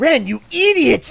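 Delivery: cartoon character voice. Giving voice-acting tips, the speaker demonstrates a pitched-up character voice. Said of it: "pitch it up a little bit".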